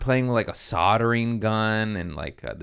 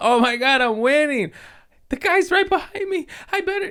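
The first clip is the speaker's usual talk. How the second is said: mock panic in a higher little-kid voice; 3 dB louder than usual. Retelling a dirt-biking kid's video: imitating a panicking kid. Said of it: "and then he starts panicking".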